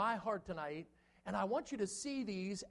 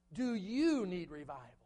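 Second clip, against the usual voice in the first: heavy emphasis on the word "you". Asking the question for tonight, stress on the word you. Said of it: "We're stressing the word you because we want to make it personal".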